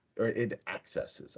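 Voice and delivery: accesses stressed on wrong syllable.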